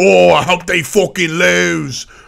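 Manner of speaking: fake English accent, lose stretched out. Acting out a guy who grew his hair out, in a put-on English accent. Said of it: "Shout outs to my English accent".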